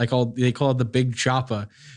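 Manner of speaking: ordinary talk, nothing marked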